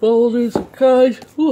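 speaking through a yawn. Showing a collection of magazines and cards, yawning. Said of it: "sorry, I'm yawning".

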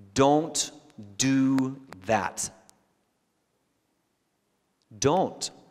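very slow, deliberate, emphatic, word by word. Speaking to Christians dating non-believers, saying it slowly. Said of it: "let me say this slowly".

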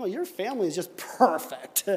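snide, mocking, dripping sarcasm. Example of hurtful sarcasm to avoid: sarcastic, mocking tone.

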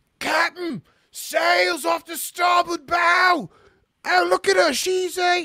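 shrill, eager, very high, drawn-out shout. Game master voicing a lookout calling down from a ship's rigging, shouting.

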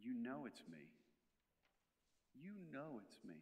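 slow, unhurried, deliberate almighty voice. Showing the congregation how to speak as the voice of God: voice of God. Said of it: "your voice is gonna sound like this".

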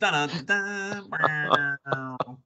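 belted-out vocal entrance music. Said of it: "you also get a snow entrance".

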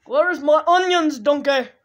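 loud, high ogre bellow. Asked to do the Shrek, attempting the voice; Shrek voice. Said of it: "Do the Shrek".

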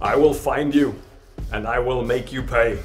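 clear, distinct delivery. In a roleplaying game, the character Kynan swears a vow to the wind, loud and clear. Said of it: "uttering this curse in a loud, clear voice".

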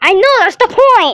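high-pitched excited yelling right into the mic. Showing the view on camera, the speaker yells into someone else's mic: yelling. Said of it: "I'm yelling into their mic".

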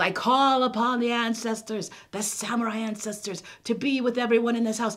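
grand, booming, high-pitched proclaiming voice. A child retells a story, acting out their father addressing the household, calling on ancestors for protection. Imitating a towering father. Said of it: "My dad is sitting in this giant lazy boy chair, and he's this giant man sitting in this giant chair".

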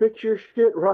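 very high, griping yell. Retelling falling into a canyon while playing online: retelling a yell. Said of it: "I just yell".

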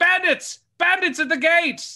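shrill, very high, loud, booming alarm shout. A game master narrates someone raising the alarm about bandits at the gates, shouting an alarm. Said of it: "you all hear someone shout".

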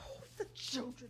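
low, soft muttering. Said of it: "What are you muttering?".

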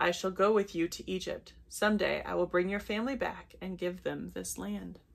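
plain reading voice

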